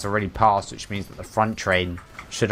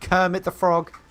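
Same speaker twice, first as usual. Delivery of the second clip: normal talking voice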